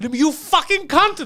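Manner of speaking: mock frantic, shrill, high, enraged scream. Telling a story, speaker acts out a group losing their minds, imitating people yelling. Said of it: "They're yelling".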